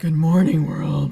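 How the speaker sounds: loud, low-pitched voice.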